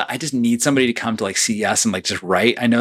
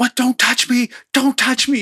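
frantic, very high, shrill, freaked-out scream; 13 semitones higher than usual. Recounting a teammate jostled by a reporter at CES: imitating someone screaming. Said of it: "just started screaming like".

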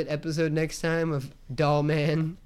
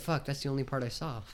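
put-on sad voice, much quieter; 2 semitones lower, 8 dB quieter than usual. Retelling Elliot's reaction to a movie, imitating Elliot sounding sad. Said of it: "He's all sad".

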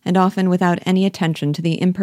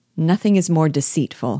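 ordinary delivery

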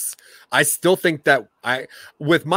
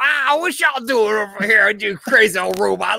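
put-on old-man voice, much higher; 7 semitones higher than usual. Recounting a movie scene with an old robot who has a cane, Jetfire old-man voice. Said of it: "that one old robot that has like a".

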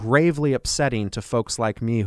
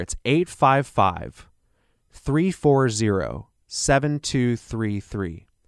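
speaking slightly more slowly. Repeating the phone number for callers, a little slower. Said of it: "I'll say that a little slower".

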